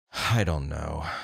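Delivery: drained, weary, can't-be-bothered, huffed-out delivery. Recreating how a mom answered her son at lunch: imitating a weary sigh. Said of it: "I'm gonna recreate it here".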